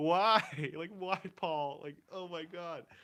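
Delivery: high, loud, drawn-out sobbing through words. Retelling crying alone in an upstairs living room: imitating own past crying. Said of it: "I was just crying alone".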